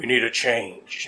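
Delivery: deep, slow, commercial voiceover announcer voice. Describing sad commercials, doing the Allstate guy's deep voice. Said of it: "the Allstate guy with his deep voice going".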